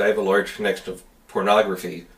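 ordinary talk, nothing marked

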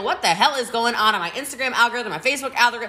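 ordinary talk, nothing marked

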